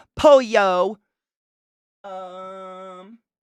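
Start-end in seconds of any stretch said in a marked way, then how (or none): 0.2-1.0 pollo said in a dumb American accent. Pronouncing an italian food word: dumb american accent. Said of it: "I'm gonna say it like a dumb American".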